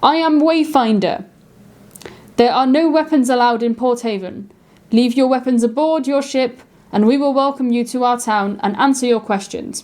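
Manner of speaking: steady, formal proclaiming voice. Voicing a character who calls out to visitors on a ship, booming Wayfinder voice. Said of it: "His fo- voice booms, easily carrying across the distance".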